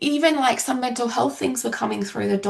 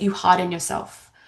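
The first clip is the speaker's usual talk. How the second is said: plain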